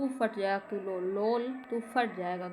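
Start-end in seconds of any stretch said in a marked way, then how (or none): none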